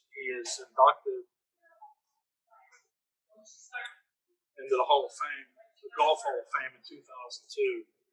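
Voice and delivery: choked-up voice, catching and breaking with emotion. Telling of a caddie's Hall of Fame induction, the speaker is choked up. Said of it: "I got choked up there".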